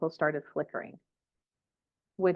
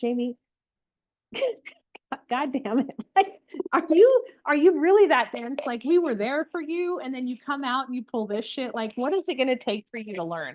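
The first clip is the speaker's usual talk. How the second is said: high, laughing, exasperated voice. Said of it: "I know my team was like".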